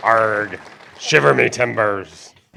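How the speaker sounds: stock put-on pirate voice. Reading the raffle winner's name while talking like a pirate: pirate talk. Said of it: "the talk like a pirate thing".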